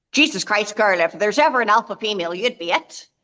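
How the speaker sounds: put-on strong, thick, laid-on Irish accent. Retelling what a famous Irish sports writer said to her, Paddy Heaney's Irish accent. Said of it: "he's a great accent on him".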